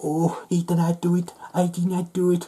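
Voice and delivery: high, mocking imitation. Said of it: "he thought he'd be".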